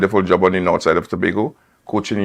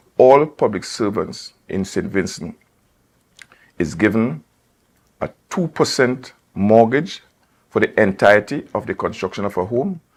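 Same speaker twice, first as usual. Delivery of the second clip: unhurried, slow, deliberate, spelled-out delivery; 3 semitones higher than usual. Speaker addressing public servants and contracted workers so all can hear, speaking slowly. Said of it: "I want to say this slowly".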